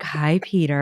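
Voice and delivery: put-on sultry tone. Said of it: "a sultry, like".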